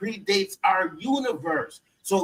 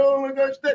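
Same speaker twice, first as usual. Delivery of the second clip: high, tearful, fake sobbing; 5 semitones higher than usual. Mocking a fake-out movie death where everybody is crying: mock crying. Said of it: "Everybody crying, crying".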